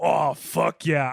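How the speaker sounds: put-on, mock seductive sexual tone. Showing how a plain phrase sounds sexual in the right tone: put-on sexual tone. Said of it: "if you say them in the right tone".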